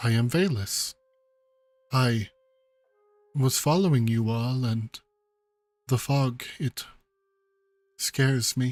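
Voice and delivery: soft, quiet character voice. A game master voicing a stranger answering a player's question, soft, quiet voice. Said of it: "she speaks to you in a very like soft, kind of quiet voice".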